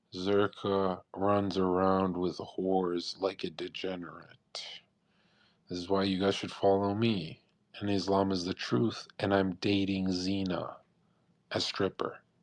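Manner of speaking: put-on, low, slow, flat, matter-of-fact deadpan. Imitating Sneako speaking to the camera: imitating someone's deadpan delivery. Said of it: "he'll look deadpan at the camera and say".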